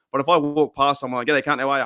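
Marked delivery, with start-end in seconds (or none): 1.2-1.8 super fast, rattled off, words run together. Greeting someone while walking past them, rattled off very fast. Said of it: "You don't even know I said it. It was that fast".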